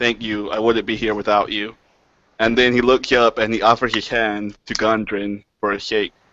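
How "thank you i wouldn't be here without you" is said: hushed, very quiet, close half-whisper. A character leans down beside someone to thank him, very quiet half-whisper. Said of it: "very quietly whisper".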